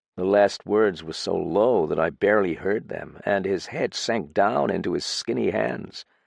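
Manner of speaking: usual speaking voice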